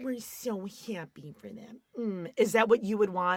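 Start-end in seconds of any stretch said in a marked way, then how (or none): 0.0-1.8 put-on mocking sarcasm, much quieter. Speaker mimics the listener's reaction to the others leaving: mimicking a sarcastic tone. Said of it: "You have to be all sarcastic about it".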